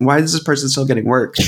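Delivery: ordinary delivery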